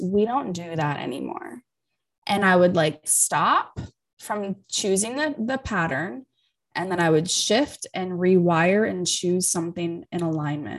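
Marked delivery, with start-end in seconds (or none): 0.0-1.6 put-on soft, gentle tone. Recalling a woman's constant reminder during shifting work, imitating a gentle voice. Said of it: "constant hearing that voice".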